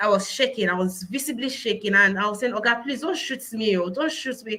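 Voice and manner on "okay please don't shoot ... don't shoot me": normal talking voice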